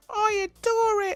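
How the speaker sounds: very high cartoon puppet voice. Reading out a regular viewer's pillow review: whittled Disney puppet voice. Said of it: "a whittled puppet from a Disney thing".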